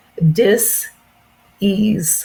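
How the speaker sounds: "disease" split slowly into two words: dis-ease. Explaining a term, with 'dis ease' said slowly, split. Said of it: "I want to say this slowly".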